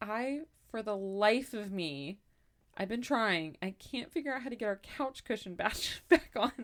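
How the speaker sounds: play-acted hopeless, beaten-down, defeated tone. Retelling a phone call in which he asked for help: imitating a defeated tone. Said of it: "he sounded so defeated".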